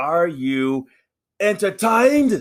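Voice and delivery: high, squeaky voice, deliberately done badly. Doing a quick Sheamus impression while chatting about wrestling: worst Sheamus impression. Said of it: "that's my worst Sheamus impression".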